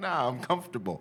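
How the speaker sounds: put-on high, laughing, stubborn childlike voice.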